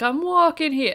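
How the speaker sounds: New York Long Island accent. Showing a favorite Long Island line: Long Island accent. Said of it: "the whole Long Island".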